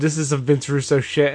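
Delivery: ordinary delivery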